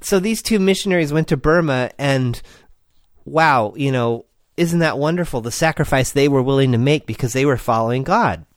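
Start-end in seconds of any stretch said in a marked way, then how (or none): none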